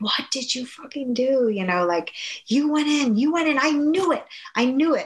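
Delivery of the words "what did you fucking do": mock screaming, much higher. Retelling how he screamed at the speaker after they got caught, retelling a scream. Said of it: "he's screaming at me".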